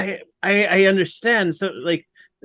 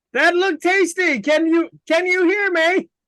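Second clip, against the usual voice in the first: very high-pitched, in-character yell; 10 semitones higher than usual. Calling out to a giant creature in a show pool: yelling in character. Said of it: "I'm gonna yell something else out in Primordial".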